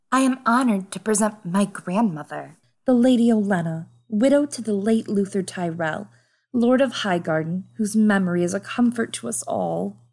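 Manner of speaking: sweet, alluring, seductive voice. Reading a story aloud in the role of Margaery, as a sweet seductress. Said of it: "Yeah, I'll be [name]. I can be a seductress. Okay. A sweet seductress. / said [name]".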